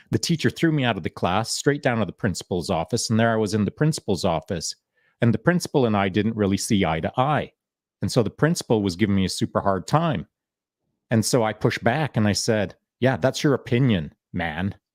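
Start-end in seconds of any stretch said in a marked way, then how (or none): 13.0-14.7 put-on snarky attitude, slower. Retelling talking back to the principal, imitating a snarky retort. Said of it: "I had a little bit of attitude in my voice".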